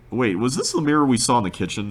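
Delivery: normal talking voice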